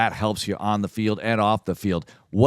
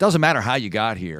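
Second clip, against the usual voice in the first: ordinary talk, nothing marked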